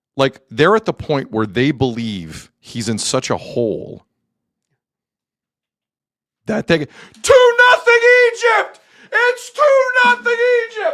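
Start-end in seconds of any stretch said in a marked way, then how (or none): 6.8-11.0 high, wild yelling. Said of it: "You're yelling at it".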